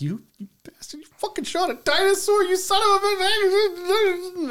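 mock very high tearful sobbing rant, "bitch" stretched. Retelling cursing at a movie that shot a dinosaur, imitating own sobbing rant. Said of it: "I cried so hard 'cause I'm like".

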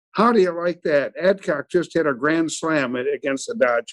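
normal talking voice

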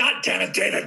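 croaky, hoarse, croaked-out outburst. Retelling cursing at the makeup artist who poked him: imitating his own hoarse yell. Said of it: "yelling at David Miller".

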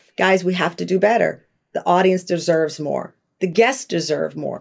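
calm, even, composed voice. The speaker retells addressing the group, retelling a calm voice. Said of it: "saying in a calm voice".

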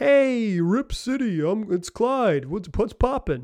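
slow, drawn-out, stretched-out voice. Imagining a former player returning to greet Rip City fans: Clyde Drexler impression. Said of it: "That's my Clyde impression".

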